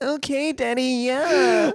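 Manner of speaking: stupid, over-the-top, very high porn character voice. Doing a joke character bit for the other speaker: stupid overblown porn character voice. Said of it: "that stupid voice".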